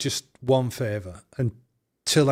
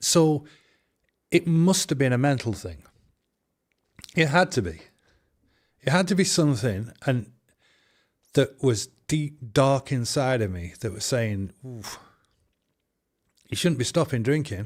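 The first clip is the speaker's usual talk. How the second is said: emotional, choked up, voice catching, struggling through words. Recalling a hard time before a parent's hospital visit, choked up. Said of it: "I was getting a bit choked up".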